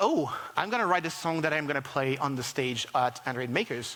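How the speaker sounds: ordinary talk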